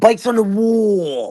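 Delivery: "wall" held out long. Imitating a man's way of enunciating, holding out the last syllable. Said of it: "he holds out the last syllable".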